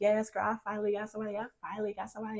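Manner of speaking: put-on thrilled, excited, gushing tone. Retelling answering a friend who asks about a client: imitating own excited reply. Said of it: "I'm excited".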